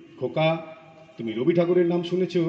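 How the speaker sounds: plain reading voice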